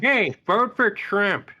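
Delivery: very high, pushed-up cartoon dad voice. Speaker recalls once doing a Peter Griffin and demonstrates: Peter Griffin voice. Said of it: "I did a Peter Griffin once".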